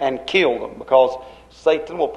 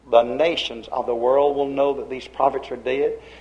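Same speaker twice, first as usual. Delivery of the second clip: ordinary delivery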